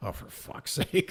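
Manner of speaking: hushed, barely voiced mutter under the breath. Retelling a film's seance scene: muttering under breath like Gabriel Byrne. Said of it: "under his breath".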